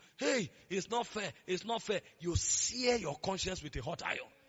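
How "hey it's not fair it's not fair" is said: normal talking voice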